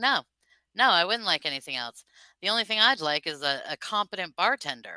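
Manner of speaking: normal talking voice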